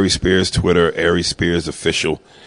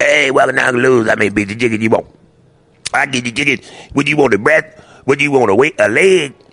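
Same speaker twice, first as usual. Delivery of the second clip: pitched-up voice, like drinking hot grease; 6 semitones higher than usual. You're showing how Uncle Lou, who makes the hot chicken, talks; Uncle Lou voice, drinks hot grease. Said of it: "He sounds like he drinks the hot grease".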